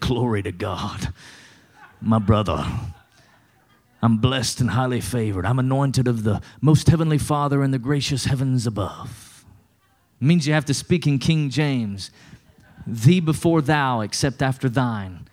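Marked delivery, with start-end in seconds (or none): 0.0-9.4 changed, churchy, pious put-on preacher voice. Showing how to answer when someone asks how you're doing, put-on religious voice. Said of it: "you got to change your voice".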